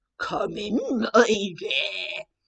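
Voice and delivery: low, deep, scratchy, hushed voice. Reading a story aloud, the wolf in Granny's clothes answers Little Red: deep, scratchy voice. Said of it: "it was a deep, scratchy voice that answered".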